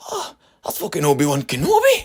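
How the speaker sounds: loud, swooping, animated, big, sing-song celebrity voice. Showing how people usually do impressions of Ewan McGregor: Ewan McGregor impression. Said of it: "when they do impressions of Ewan McGregor. They go".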